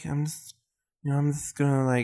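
lisping every s, as in "just". Answering whether he has a weird voice: Mike Tyson impression with lisp. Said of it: "he's got the lisp".

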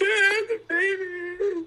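very high, drawn-out mock tearful crying. Retelling a sister coming back into the room: imitating Chase crying.

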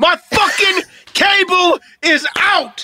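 play-acted, very high, slow, drawn-out, heated grumble. Imitating Daniel, who seems heated about his cable: imitating heated Daniel. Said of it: "Daniel's a bit heated".

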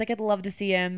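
normal talking voice

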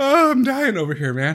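helpless cracking up, voice pitched very high. Reacting in a group conversation to something wild, laughing uncontrollably. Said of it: "I can't even get full sentences out right now".

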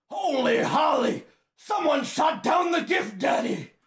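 high-pitched shouting yell. Reading a scripted scene aloud, a character yells to the others. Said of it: "Lars yells".

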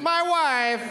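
reflexive silly voice, pitched high, blurted straight out. Responding reflexively whenever someone says a trigger phrase: Borat voice. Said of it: "I immediately have to respond with".

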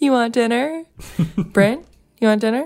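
put-on very high, overly chipper, half-laughing child voice. Retelling a child teasing her upset brother: imitating a child, too cheerful. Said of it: "too cheerful, and she's kinda, like, laughing".

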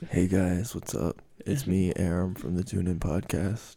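very low, hushed, effortless, soft-spoken voice. Told to hear how he does it, the speaker imitates a podcaster's greeting: soft-spoken Aram impression. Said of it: "He's very soft-spoken".

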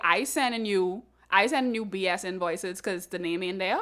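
ordinary delivery

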